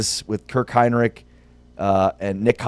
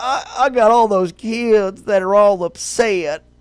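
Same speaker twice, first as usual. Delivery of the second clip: very slow, exaggerated, laid-on southern drawl; 10 semitones higher than usual. Quoting a man asked after the game, in an exaggerated southern accent. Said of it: "I may have exaggerated his southern accent".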